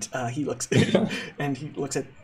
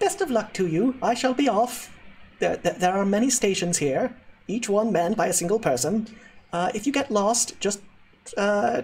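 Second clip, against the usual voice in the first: pitched-up, polite voice; 6 semitones higher than usual. Voicing a character who bows and wishes the group luck: Witherford Pithquibble voice. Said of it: "Pithquibble gives you a small bow, uh, and says".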